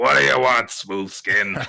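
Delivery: loud, pushed voice from a rough, hoarse throat. Comparing a man's ruined smoker voice to a game creature: Fallout ghoul voice. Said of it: "Kind of sounds a little bit like a ghoul from Fallout".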